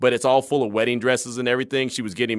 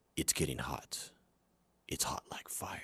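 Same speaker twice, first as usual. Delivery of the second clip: intense, hushed, dead serious near-whisper; 10 semitones lower, 18 dB quieter than usual. Recall how a CSI Miami character you liked always talked, intense Horatio Caine voice. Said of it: "he's really intense".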